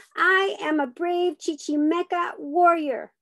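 loud, high, forceful. Swinging an arm at a man while others film, repeating it louder. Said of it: "I repeat louder".

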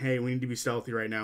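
ordinary talk, nothing marked

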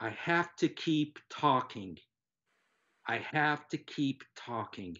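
mock tearful weeping, slow, small crying voice. Retelling a little voice heard inside during a nap: imitating a crying voice. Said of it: "this little voice was like, like crying".

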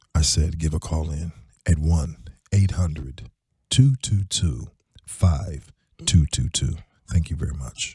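low, seductive, sexy radio voice. Co-host asks for the call-in number again; he repeats it in a sexy voice. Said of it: "Use the sexy voice".

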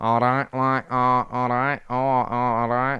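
put-on northernish English accent. Doing accents on request, the speaker tries a Manc-style accent: northernish English accent. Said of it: "all my sort of northernish accents".

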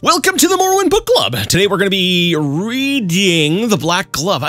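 overdramatic. Hosting a book club reading, introducing the book overly dramatically. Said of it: "Is that a little bit too dramatic?".

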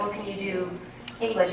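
normal talking voice

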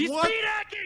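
very high, loud, full-throated shout. Warning teammates that an enemy is speed hacking: yelling. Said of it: "Sorry for yelling".

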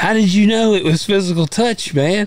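high, mock-dumb voice.

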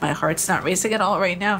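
ordinary delivery

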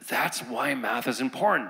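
high, eager student voice. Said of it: "they look at education as".

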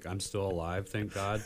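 mock depressing delivery. Retelling videos of kids joking about surviving dad jokes: imitating a depressing delivery. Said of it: "they do it in a depressing way".

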